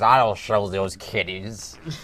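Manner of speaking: slow, growling pirate voice. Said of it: "the guy talks like a pirate".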